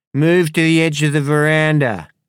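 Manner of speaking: put-on high, loud slurred words. Reading a story, the narrator voices a woman giving orders in a slurred voice. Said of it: "said the woman in a slurred voice".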